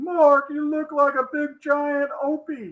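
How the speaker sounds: high-pitched put-on voice, barked.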